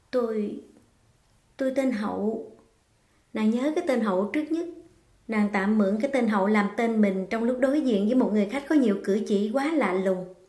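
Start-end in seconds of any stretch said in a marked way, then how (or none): 0.1-2.5 unsure, hesitant, halting, faltering delivery. Nương, deciding to keep lying to the guest, answers him hesitantly. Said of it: "Nàng ngập ngừng đáp".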